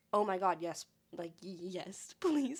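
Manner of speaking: put-on excited delivery. Retelling accepting a boss's offer of DVDs: retelling own excited reply. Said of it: "I was so freaking excited about this".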